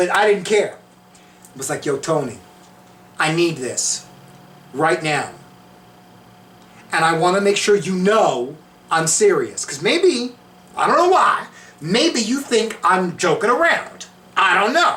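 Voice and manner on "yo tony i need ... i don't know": put-on laid-on Italian-American New York accent. Retelling what the speaker said to tony, in a new york italian accent. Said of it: "I know I was talking like an Italian from New York".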